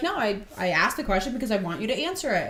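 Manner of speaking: ordinary delivery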